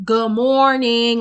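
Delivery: loud, mocking, in-your-face sarcastic tone. Speaker retells how a man greeted them, in their face: retelling a sarcastic greeting. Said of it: "he's like sarcastically".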